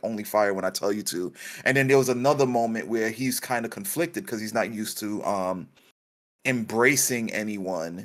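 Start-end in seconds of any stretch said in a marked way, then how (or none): 0.0-1.3 put-on low, calm delivery. Describing a father who stops yelling at his son, imitating a low, calm voice. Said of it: "he's like really like low, calm".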